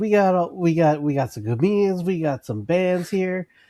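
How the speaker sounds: stage announcer voice. Retelling what a festival announcer said, imitating a festival announcer. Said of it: "the announcer goes, he's like".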